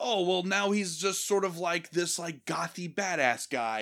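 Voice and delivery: ordinary talk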